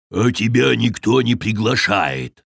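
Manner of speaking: rumbling, growling bear voice. A narrator reads the bear's retort to Grubby: growled. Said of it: "прорычал медведь".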